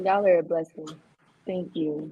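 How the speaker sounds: grateful, tearful voice, crying through tears. Thanking viewers for their help: crying while thanking. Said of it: "I really cried up".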